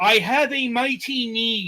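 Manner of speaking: stretched, high-pitched cartoon alien. Describing a game character's voice, quoting it: Invader Zim voice. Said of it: "all I can hear is".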